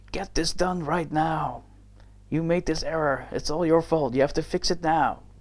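acted-out furious, blaming, angry tirade. Retelling a man yelling at him beside his desk, acting out an angry yell. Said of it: "yell at the top of his lungs, being totally angry".

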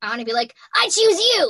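raspy voice, pitched high. Explaining a personal take on a character voice: raspy Ash Ketchum voice. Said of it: "taking it like Ash Ketchum rasp".

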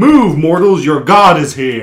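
thundering, booming, godlike, intimidating shout. Retelling a spell-boosted attempt to frighten armed guards: retelling a magically loud intimidating shout. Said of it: "increase the volume of my voice".

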